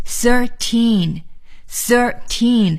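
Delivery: put-on slow thirteen, stress on both thir and teen.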